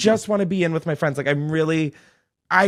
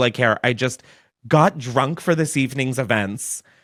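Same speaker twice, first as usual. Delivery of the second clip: plain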